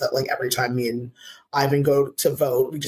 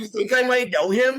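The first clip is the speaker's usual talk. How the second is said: high, laughing, incredulous voice full of disbelief.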